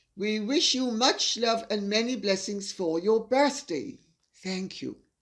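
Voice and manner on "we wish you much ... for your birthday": usual speaking voice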